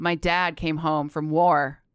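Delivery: deadpan, low flat monotone. Demonstrating how a millennial would tell a dramatic story, flat monotone. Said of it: "Just real like kind of monotone and no one gives a crap".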